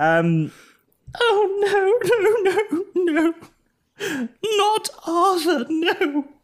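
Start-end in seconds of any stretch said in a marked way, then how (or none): 1.1-6.3 fake sobbing, acted crying woman's voice, higher. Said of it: "she breaks down in tears".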